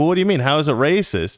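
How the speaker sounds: ordinary delivery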